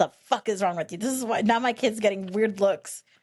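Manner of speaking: mock-furious put-on angry voice. Retelling how mom kicked dad under the table, imitating an angry mom. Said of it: "my mom gets so fucking pissed".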